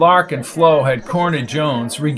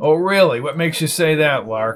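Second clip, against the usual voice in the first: ordinary delivery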